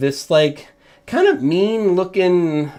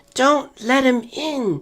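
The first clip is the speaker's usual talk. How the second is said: put-on very high, tiny, cute four-year-old voice; 10 semitones higher than usual. Narrator voicing a small kid who motions the listener closer; cute four-year-old voice. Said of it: "says in a cute like four year old voice".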